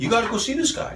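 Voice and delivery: high-pitched, eager, urging voice.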